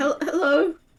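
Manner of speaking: tiny, squeaky, halting, very high voice. Voicing a shy character greeting new people: very high voice. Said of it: "It's very high".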